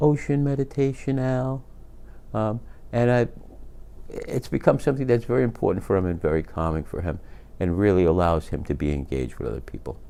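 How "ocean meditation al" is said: mock sugary sweet, pitched-up voice. Retelling what he said coming through the door, imitating a very sweet voice. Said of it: "he said in a very sweet voice".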